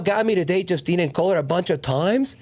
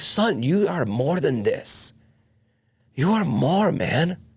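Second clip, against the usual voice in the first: desperate, begging, pleading tone; 2 semitones lower than usual. Retelling how someone urged the speaker to go get her: imitating a desperate plea. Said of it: "he just literally desperately like".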